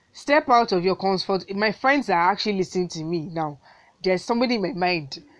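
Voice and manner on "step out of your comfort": loud, rousing, yelled shout. Presenting the first tip to listeners, shouting. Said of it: "I'm literally shouting this one".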